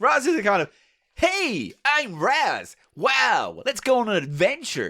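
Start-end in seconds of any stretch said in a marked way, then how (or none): 1.1-4.9 bad put-on American accent. Arguing over a name, the speaker does a bad American-accent Raz voice. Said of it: "I can't do American accents".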